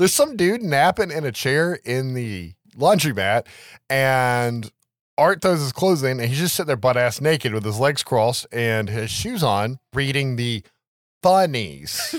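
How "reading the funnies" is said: air-quote voice setting words apart. Describing a man waiting on his laundry at the laundromat, in an air-quote voice. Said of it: "That's the air quote voice".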